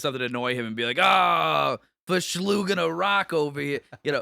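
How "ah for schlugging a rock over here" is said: very slow put-on Boston drawl, long ah. Retelling dropping into an accent to annoy him, Boston accent. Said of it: "like the Boston accent".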